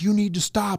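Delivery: calling out as if from a distance. Retelling yelling at a man from across the way: retelling own yell. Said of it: "I'm yelling at this guy from across the way".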